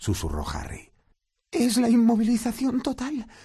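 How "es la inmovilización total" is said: anguished voice, very high-pitched. Narrating a story, Hermión answers Harry's question: distressed. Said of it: "dijo Hermión angustiada".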